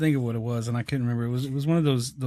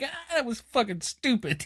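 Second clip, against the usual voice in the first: very high-pitched, swooping sarcastic jeer; 11 semitones higher than usual. Retelling reacting to a bad joke from the speaker: imitating a sarcastic laugh. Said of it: "And then I laugh sarcastic".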